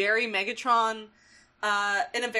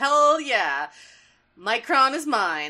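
slow, drawn-out, self-satisfied gloating, acted out. Retelling a cartoon scene where Starscream wins, smug Starscream impression. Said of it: "smiles smugly, and he's like".

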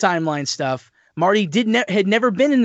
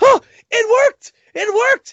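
very loud, high surprised exclamation; 6 dB louder than usual. Retelling a movie scene where Doc's device works: Doc Brown exclaiming very loudly. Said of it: "Doc exclaims very loudly".

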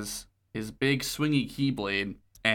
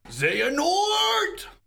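long, high, drawn-out, dramatic yell. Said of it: "It was a bit too deep".

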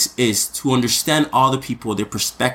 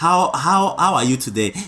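imitated broken English pronunciation; 4 semitones higher than usual. Retelling how he spoke when newly arrived in canada, in broken english. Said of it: "So I speak like this".

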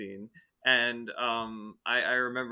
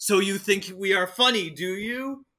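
taunting, pitched-up, confrontational voice; 8 semitones higher, 4 dB louder than usual. Taunting an opponent in character before challenging him to arm wrestle. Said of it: "and I'm just like".

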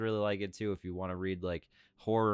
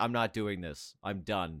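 mock fed-up, done-with-it, resigned tone. Imitating another speaker who just said he's finished: mock fed-up quitting. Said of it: "are you just like".

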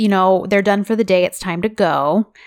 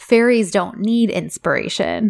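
mock muttering under breath. Retelling a scene in which he mutters a line: imitating someone muttering under breath. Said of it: "he mutters under his breath".

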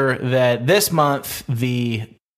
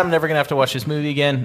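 ordinary talk, nothing marked

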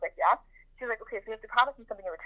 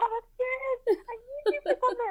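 put-on screaming, higher pitch. Retelling calling a sister upstairs after a haircut accident: imitating a scream at a sister. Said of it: "I was screaming at my sister".

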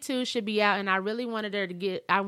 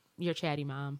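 mock dry, low, flat deadpan delivery; 6 semitones lower, 7 dB quieter than usual. Retelling what A J said to his mom: imitating A J's deadpan delivery. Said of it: "He said it just like that with a straight face".

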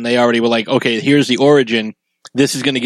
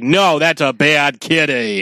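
slow, cross, angry scolding tone; 3 semitones higher than usual. Showing how people scold a cat, mock-angry scolding. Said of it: "But when you are angry".

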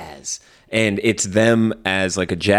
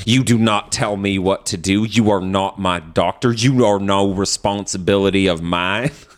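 put-on accent of the American South. Imitating a man's reply, in a Southern accent. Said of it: "I know that accent so well too. It's just like the South".

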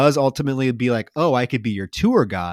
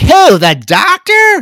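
very loud, very high-pitched outburst; 11 dB louder than usual. Retelling a film scene where she answers him: imitating a loud line. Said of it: "Real loud".

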